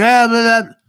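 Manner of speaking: overblown, very loud shouting and yelling. Showing how yelling over the mic sounds: demonstrating yelling over the mic. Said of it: "if I'm like this over the mic".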